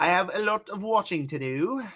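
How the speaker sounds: fake British accent on the line. Repeating a line about watching to do, in a put-on British accent. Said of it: "So I say in my British ac-".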